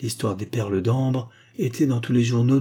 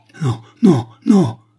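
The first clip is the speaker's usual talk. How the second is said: desperate, very loud, high despairing cry at full voice; 5 semitones higher, 8 dB louder than usual. Javens, accused of murder, leaps to his feet, crying out loudly. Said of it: "s'écria-t-il à haute voix".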